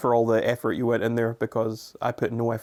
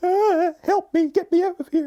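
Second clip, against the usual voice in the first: energetic, very high-pitched, slow and drawn-out voice; 4 dB louder than usual. Imitating the other speaker being nervous: imitating the other speaker's voice. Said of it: "In that exact voice".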